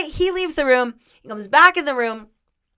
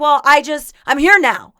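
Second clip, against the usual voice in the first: ordinary talk, nothing marked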